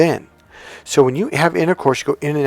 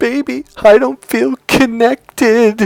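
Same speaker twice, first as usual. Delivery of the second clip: very high, loud, drawn-out tearful crying wail; 10 semitones higher, 5 dB louder than usual. Retelling what she said to him as he was leaving for work, imitating someone crying. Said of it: "and she's crying".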